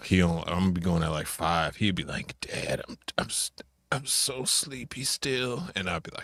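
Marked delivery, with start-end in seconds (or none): 2.4-5.6 tiny, high, soft, raspy, half-asleep voice. Retelling his kid waking up early: imitating Cole's little raspy voice. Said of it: "his little raspy voice".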